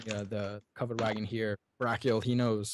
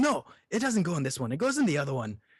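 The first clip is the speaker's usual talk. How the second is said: high, swooping fantasy dwarf hollering yell; 6 semitones higher, 4 dB louder than usual. Voicing a dwarf loading a box into the wrong wagon: dwarf yelling. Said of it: "one of 'em yells".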